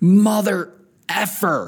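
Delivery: sudden, high-pitched, acted-out screaming cry. Retelling a shout at an opponent after a foul: retelling a scream. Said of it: "I screamed out".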